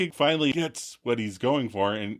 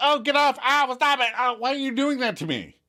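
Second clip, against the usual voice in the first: very high, squeaking voice; 12 semitones higher than usual. Retelling a sitcom scene, quoting Phoebe: imitating Phoebe squeaking. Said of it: "Then Phoebe squeaks".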